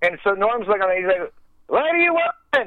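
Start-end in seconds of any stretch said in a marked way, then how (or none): 1.7-2.7 mock-yell, much higher. Retelling a story, the speaker voices Norm answering through the door, imitating Norm yelling. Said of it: "He's like yelling through the door".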